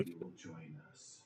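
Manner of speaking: ghostly, eerie, low whisper, barely audible. Game narrator voices four separate voices speaking in chorus, in a whisper. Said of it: "four separate voices whisper".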